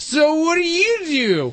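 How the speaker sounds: put-on slurred drunk voice. Re-enacting being interviewed at a blood service, saying it like a drunk. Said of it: "you were saying it like a drunk too".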